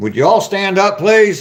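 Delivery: shrill, very high, loud yell. Speaker addressing the chat before getting coffee, in a loud yell. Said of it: "I didn't mean to yell at you".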